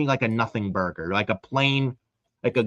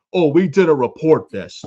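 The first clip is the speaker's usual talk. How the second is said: smug know-it-all tone, high and raised; 5 semitones higher, 8 dB louder than usual. Retelling a reporter's tweet on X, mocking Sean Ross Sapp's smug tone. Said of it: "Like he's a fucking smartass".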